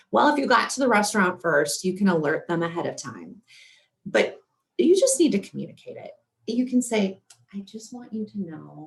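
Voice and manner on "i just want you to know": hushed, very quiet, soft confiding tone. Advising how to tell a restaurant server about health needs: hushed tone. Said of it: "kind of in a hushed tone".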